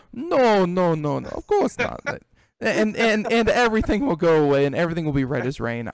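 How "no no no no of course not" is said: put-on heavy, laid-on Russian accent, slow and swooping. Acting out someone's denial when asked outright, in a thick russian accent. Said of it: "in a thick Russian accent".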